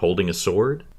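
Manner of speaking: ordinary talk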